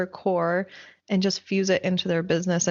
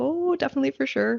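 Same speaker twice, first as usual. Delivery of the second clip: put-on, pitched-up Canadian accent; 6 semitones higher than usual. Teasing the other speaker by imitating how they sounded: Canadian accent. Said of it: "you just sounded Canadian right now".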